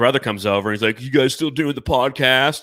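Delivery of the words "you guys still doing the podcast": put-on stoner bro voice. Imitating the other speaker's brother at Thanksgiving: impression of a stoner brother. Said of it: "I nailed that impression".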